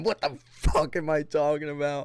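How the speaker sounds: mock, half-hearted, mild screamed outburst. Retelling own confused outburst about losing track: re-screaming own words. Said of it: "I'm screaming".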